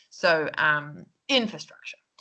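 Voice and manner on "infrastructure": infrastructure with stress on first syllable in. Showing a learner where the word stress falls: stress on in in infrastructure. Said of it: "the word stress".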